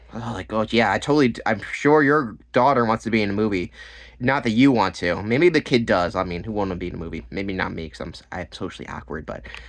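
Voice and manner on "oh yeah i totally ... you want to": normal talking voice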